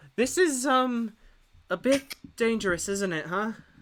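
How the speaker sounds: meek, high, timid, hesitant little voice. Game master voicing Halo as a tentacle writhes, meekly calling out as Halo. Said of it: "meekly calling out".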